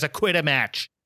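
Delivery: play-acted earnest, no-nonsense, serious, sober voice. Retelling a scene from a Christmas Carol story: imitating a serious voice. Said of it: "turns on her serious voice".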